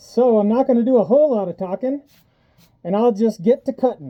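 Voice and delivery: talking muffled. Explaining before starting to cut, wearing a respirator: voice muffled by respirator. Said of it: "My voice is muffled because I have my respirator on".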